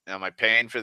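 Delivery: ordinary talk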